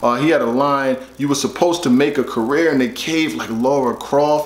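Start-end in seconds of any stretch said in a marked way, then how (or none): none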